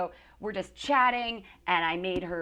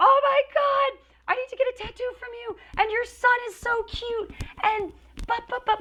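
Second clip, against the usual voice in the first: high, thrilled, excited screaming gush; 6 dB louder than usual.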